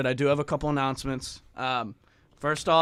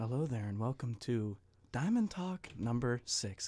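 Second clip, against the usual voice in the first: hushed, very quiet, soft-spoken voice; 3 semitones lower, 12 dB quieter than usual. A host welcomes listeners to Diamond Talk number six, speaking quietly. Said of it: "the reason I am speaking so quietly".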